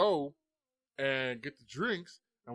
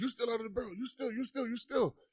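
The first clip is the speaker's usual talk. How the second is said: put-on high yelling, repeated; 9 semitones higher than usual. Retelling a shopkeeper accusing them of stealing: imitating a shopkeeper yelling. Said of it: "he's yelling at us".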